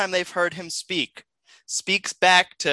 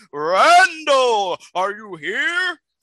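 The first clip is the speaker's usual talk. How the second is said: loud, slow, drawn-out bellow, pitched up; 5 semitones higher, 5 dB louder than usual. Voicing Bartholomew the Bearded as he charges through the door, bellowing. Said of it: "he kind of just bellows like".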